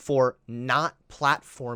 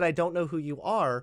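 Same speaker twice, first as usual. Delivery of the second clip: ordinary delivery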